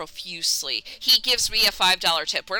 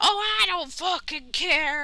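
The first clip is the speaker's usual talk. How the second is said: high, drawn-out, put-on angry yelling; 8 semitones higher than usual. Retelling a customer going off at the till: imitating a customer yelling. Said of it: "Instantly starts yelling at me".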